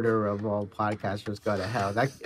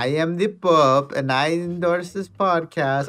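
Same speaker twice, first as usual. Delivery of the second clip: loud, slow, laid-on Italian accent; 7 semitones higher, 7 dB louder than usual. Joking about a Pope endorsement, imitating the Pope in an Italian accent. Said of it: "I think that's what an Italian accent sounds like".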